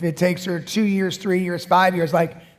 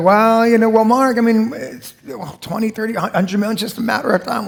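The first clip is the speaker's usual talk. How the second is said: casual, offhand, matter-of-fact tone; 4 semitones higher, 4 dB louder than usual. Retelling a guest's answer from a pre-interview: imitating Brad, matter-of-fact. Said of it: "he just said that so matter-of-factly".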